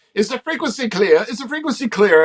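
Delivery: put-on speaking in a South African accent. Retelling what a guy on the frequency asked, in a South African accent. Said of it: "a guy with a South African accent go".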